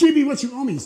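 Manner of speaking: harsh, loud, ruthless and pitiless. Quoting the servant while he chokes the other, imitating a merciless demand. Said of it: "the guy is merciless".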